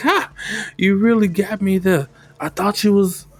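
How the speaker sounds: high, bursting out laughing through the words. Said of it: "she just busts out laughing, like".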